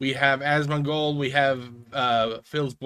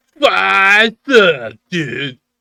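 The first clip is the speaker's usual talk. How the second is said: mocking put-on voice, higher and louder; 5 semitones higher, 13 dB louder than usual. Mocking an annoying habit while comparing channel numbers: mocking Phil impression. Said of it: "that annoying thing that Phil does where he goes like".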